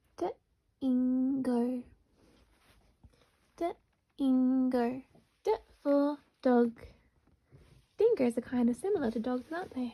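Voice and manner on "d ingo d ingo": said really slowly, words drawn out. Sounding out a word together with learners: said really slowly. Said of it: "say it really slowly with me".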